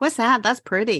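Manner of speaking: ordinary delivery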